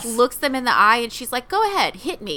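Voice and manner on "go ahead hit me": defiant, indignant, pitched-up delivery. Retelling a character's defiant line to the one who hits her: imitating someone indignant. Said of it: "she's so indignant".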